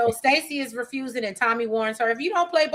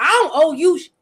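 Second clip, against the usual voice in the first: loud, put-on hard, defiant tough-guy voice; 4 semitones higher, 7 dB louder than usual. Retelling Vic's reply when Stacy asks him about Claudia, mock-tough Vic, acting out. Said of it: "Vic trying to play tough".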